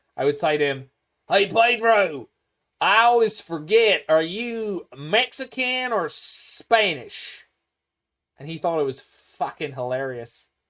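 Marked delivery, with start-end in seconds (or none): 1.3-7.5 put-on very slow, drawn-out, drawling Texas accent. Retelling how you teased a bandmate, repeat your line in a Texas accent. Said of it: "a Texas accent".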